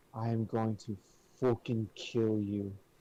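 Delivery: whisper with a threatening, menacing tone. Turning to another character after a scolding look: whispered threat. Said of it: "And I whisper".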